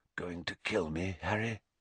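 very quiet, barely audible half-whisper. A man speaks to a boy walking toward him with a wand, half-whispering. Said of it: "he whispered".

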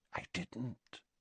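hushed, very quiet, whispered voice. Narrator reads one character's short reply to another, in a hushed voice. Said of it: "said Slughorn in a hushed voice".

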